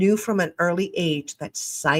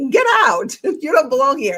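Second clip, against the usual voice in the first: mock, loud, swooping telling-off; 8 semitones higher, 7 dB louder than usual. Showing how an intrusive thought gets sent away: imitating cursing out a thought. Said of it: "sometimes I curse it out".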